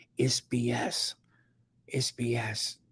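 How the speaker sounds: hushed, secretive, confiding whisper. Retelling a woman in a TikTok video asked about Juneteenth, retelling a whisper. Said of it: "And then she whispers".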